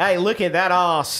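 Australian accent. Showing how the accent works for catcalling, in an australian accent. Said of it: "It's a good accent for catcalling".

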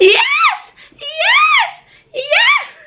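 put-on very high shouted screams, each one stretched out. Retelling your reaction on opening the package you had hoped for, reenacting a scream. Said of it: "I just literally screamed like".

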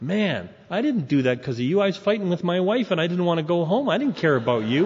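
ordinary talk

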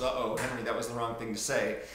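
ordinary talk

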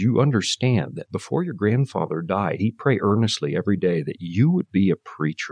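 ordinary delivery

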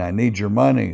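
put-on, mock crying. Retelling a stick-up, acting out the robber's demand, imitating someone crying. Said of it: "And he's crying".

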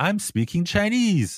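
high, slow, excited and proud exclamation.

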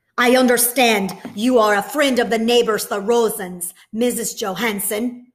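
loud, angry voice. A soldier at the door questions Mrs. Johansson, angry. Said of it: "the soldier said angrily".

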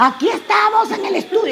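shrill field-reporter shouting, pitched way up. Recalling a first news-narrating test in the studio, retelling the shout. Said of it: "yo gritaba".

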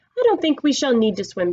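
plain reading voice

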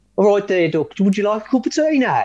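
put-on quick, high-pitched Birmingham Brummie accent. Asked by the other host to do one, demonstrating a Birmingham accent. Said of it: "I'm going to get you to do a Birmingham accent".

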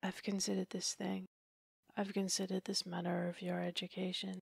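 soft and quiet. After a silence, he speaks to the woman tapping her leg with her whip, quite gently. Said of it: "but quite gently".

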